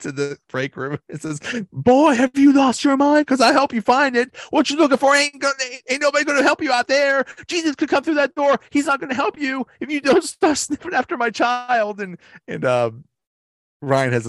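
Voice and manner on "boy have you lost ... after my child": put-on angry yelling voice, higher and louder. Retelling how a coworker scolds [name] in the break room: imitating Stanley yelling. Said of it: "Stanley yelled at me".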